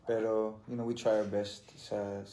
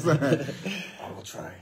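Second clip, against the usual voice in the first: grim, brooding masked-hero voice, pitched up; 8 semitones higher, 8 dB louder than usual. Saying the line again in a Batman voice. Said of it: "That's a Batman voice".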